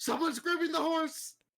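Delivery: high, loud scream. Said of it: "I scream out".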